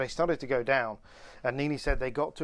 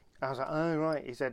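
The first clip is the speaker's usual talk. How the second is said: ordinary talk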